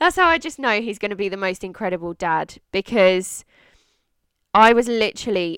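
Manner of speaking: welling up with feeling. Talking about a supportive partner who will be a great dad: getting emotional. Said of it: "I'm going to get emotional saying this now".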